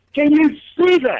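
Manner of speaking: high, slow excited yelling. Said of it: "just yelling out".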